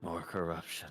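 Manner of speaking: disappointed whisper muttered under the breath. Voicing Curtis muttering under his breath, disappointed: disappointed whisper under breath. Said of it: "you hear Curtis sort of whisper under his breath".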